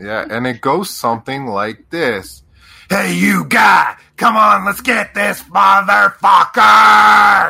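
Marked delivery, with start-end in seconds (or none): 2.9-7.5 intense, very loud, rough rallying battle cry. Cheering on a party member with Bardic Inspiration: intense rallying cry. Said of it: "a lot more intense".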